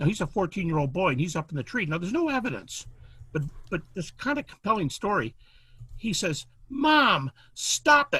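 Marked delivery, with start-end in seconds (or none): 6.7-8.2 play-acted very high-pitched, loud holler. Telling of a fourteen-year-old boy in a tree calling to his mom; imitating a boy yelling. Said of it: "And he's yelling down fourteen feet".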